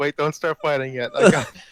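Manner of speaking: loud words breaking through laughter. Voicing Curly doubled over: laughing in character. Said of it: "Curly's just laughing".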